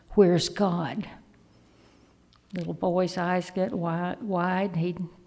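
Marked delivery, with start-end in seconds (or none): 0.1-1.0 put-on stern, severe voice. Telling a story, quoting a minister questioning a young boy: acting out a stern minister. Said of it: "looks across at him very sternly".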